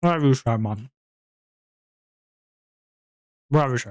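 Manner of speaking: talking with mouth full, eating. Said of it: "Talking with food in your mouth?".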